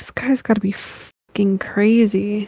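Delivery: audible aside in a stage whisper. Retelling a woman reading a message, the speaker acts out her whispering to herself. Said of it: "just whispering to herself".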